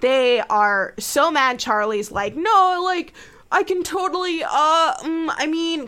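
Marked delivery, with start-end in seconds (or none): 2.4-5.9 high, halting, flustered, stop-start fumbling stammer. Retelling how Charlie answers while doors open and close: imitating distracted stammering. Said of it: "'cause he's distracted".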